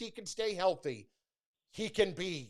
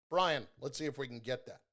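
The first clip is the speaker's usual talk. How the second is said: normal talking voice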